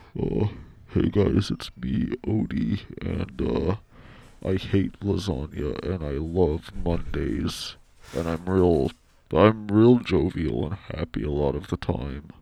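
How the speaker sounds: put-on deep dog voice. Speaker puts his dog on the mic to say his line, very deep Odie voice. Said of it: "I trained him to have a real deep voice".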